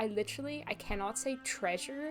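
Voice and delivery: ordinary talk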